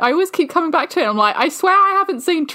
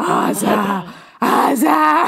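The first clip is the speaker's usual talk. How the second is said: creepy, eerie, drawn-out audiobook character voice; 3 semitones lower than usual. Recalling an audiobook voice calling a name, imitating a creepy voice. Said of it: "Creepy voice that was just like".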